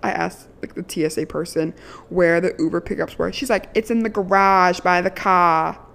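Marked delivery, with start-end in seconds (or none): 3.7-5.7 put-on Boston accent. Quoting the TSA person's answer to your question, in a stereotypical Boston accent. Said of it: "like stereotypical boston accent".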